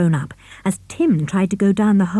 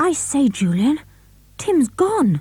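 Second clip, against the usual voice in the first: frightened, alarmed, scared voice pitched up; 6 semitones higher than usual. Narrator reading George's words to Julian, scared voice. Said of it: "said George in a scared voice".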